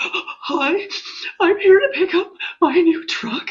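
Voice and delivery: very high, weepy, blubbering sobbing voice. Retelling walking into a dealership to collect her truck, imitating her own crying. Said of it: "And I'm just a hot mess again".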